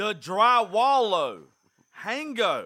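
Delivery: very loud, high English with big pitch swings. Imitating a grandfather who just speaks english louder to people who don't understand. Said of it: "My granddaddy just speaks English louder".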